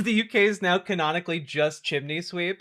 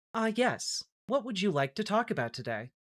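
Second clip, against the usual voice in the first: polite, helpful customer-service voice; 3 semitones higher, 8 dB quieter than usual. Trying out voices, settling on a customer service voice. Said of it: "Maybe customer service voice is more me".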